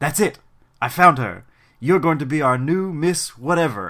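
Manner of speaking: cheesy, clichéd cartoonish vampire voice. Retelling a photographer choosing a new model: vampire voice. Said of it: "making him sound like a vampire".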